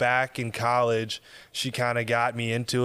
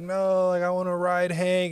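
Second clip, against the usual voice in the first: put-on high, tearful crying child voice, whining; 7 semitones higher than usual. Retelling a child being pulled off a horse: imitating a crying child. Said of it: "and she's crying".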